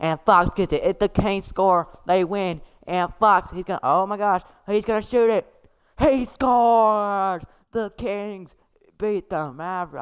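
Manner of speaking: high country accent. Calling the last plays of a basketball game for a listener, playing with a voice, in a country accent. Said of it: "Let me start a country accent".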